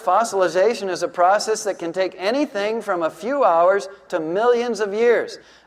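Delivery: ordinary talk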